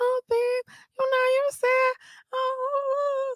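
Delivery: put-on very high, laid-on-thick baby voice, drawn-out oh. Speaker reenacting trying a baby voice on him, retelling a baby voice. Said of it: "my damn baby voice".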